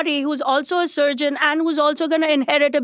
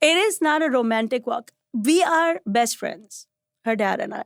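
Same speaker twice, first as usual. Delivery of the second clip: ordinary talk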